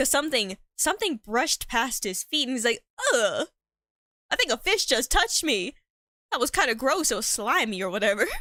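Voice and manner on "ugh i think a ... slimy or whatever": odd put-on, disgusted, grossed-out jock voice. Telling a story, voicing the popular guy after something brushed his feet, in a weird voice. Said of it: "That's a weird voice to give the nerd".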